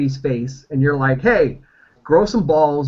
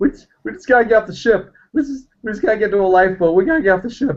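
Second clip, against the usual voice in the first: put-on tearful, weepy, high, urgent crying; 6 semitones higher than usual. During a tabletop game, a player speaks as Brady aboard a ship, crying. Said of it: "and Brady's Brady's crying, and he's like".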